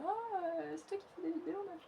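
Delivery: little put-on voice, small, high and soft. Speaker imitates someone recognizing a YouTuber, in a small voice. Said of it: "Qu'est-ce que c'est que cette petite voix?".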